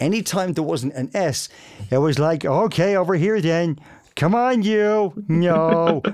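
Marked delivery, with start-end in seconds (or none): 2.4-5.1 put-on American accent, slow and drawn-out. Explaining how a cartoon character's voice was developed, put-on American accent. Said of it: "we had to perform him with an American accent".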